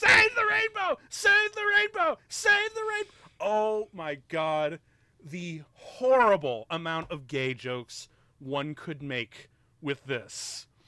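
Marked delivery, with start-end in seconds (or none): 0.0-3.1 very high, shrill, rapid, frenzied repeated manic screaming. Describing a maniac beating a man on the streets, imitating the maniac screaming. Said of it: "just screaming".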